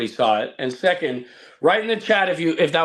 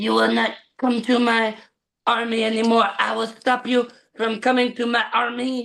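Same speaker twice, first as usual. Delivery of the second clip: Mongolian accent with higher pitch; 8 semitones higher than usual. Actor recalls playing a Mongolian general in a movie, doing the Mongolian accent. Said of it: "the Mongolian accent".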